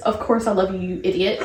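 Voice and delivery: ordinary talk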